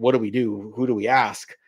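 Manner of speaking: normal talking voice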